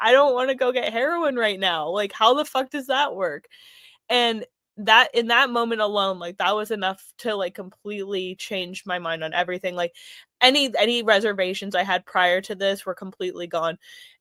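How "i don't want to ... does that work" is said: acted weeping, tearful crying voice. Retelling what a close friend said while crying: retelling a friend's crying. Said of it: "He turns to me crying and he's like".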